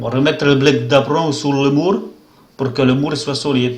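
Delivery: best-effort put-on Portuguese accent over a French one. Commenting in French on his team's matches, in a Portuguese accent. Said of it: "mon meilleur accent portugais".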